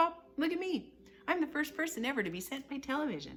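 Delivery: squeaky, very high-pitched little mouse voice. Tiny boy calls to his parents from inside the television set: tiny squeaking mouse voice. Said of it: "A tiny little voice, no louder than a squeaking of a mouse".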